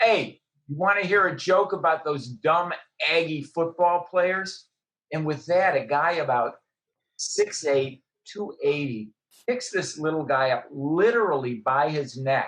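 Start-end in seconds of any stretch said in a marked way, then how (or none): 0.0-4.7 light, hinting call-out in a loud voice. Telling a joke, quoting a guy in a bar, in a loud voice. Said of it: "in a loud voice".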